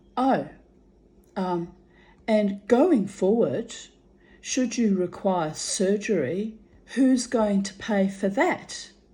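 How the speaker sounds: mock, heavily sarcastic delivery. Retelling what a receptionist asked about paying: imitating a sarcastic remark. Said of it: "she very sarcastically said to me".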